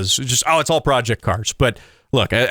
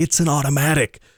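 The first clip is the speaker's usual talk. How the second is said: hushed whisper. Show host speaking to his listeners about his car, whispered. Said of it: "I got to whisper that".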